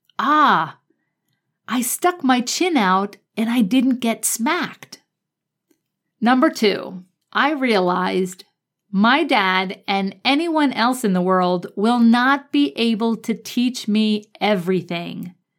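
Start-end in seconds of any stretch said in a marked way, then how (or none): 0.2-5.0 put-on small child's way of talking, childlike kid voice. Recalling a childhood lesson learned from dad, in a little kid voice. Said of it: "In my little kid voice".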